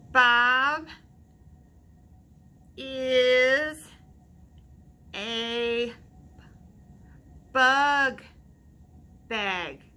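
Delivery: halting word-by-word reading. Reading a story aloud to listeners, voicing Junie B reading real slow. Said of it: "I read real slow".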